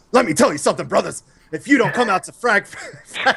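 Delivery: hammy wrestling-promo voice. Giving the others a cheesy Hulk Hogan impression. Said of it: "my cheesy Hulk Hogan impression".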